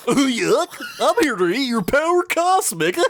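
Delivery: loud, very high, goofy, silly cartoon villain voice. Imagining the only way a movie could fail, goofy Galactus voice. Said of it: "give Galactus like a goofy voice".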